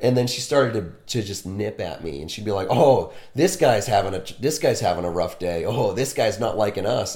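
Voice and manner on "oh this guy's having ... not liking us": plain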